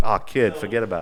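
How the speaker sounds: put-on Rhode Island accent. Urging a guest to do his hometown accent, demonstrating a Rhode Island accent. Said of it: "lean into it".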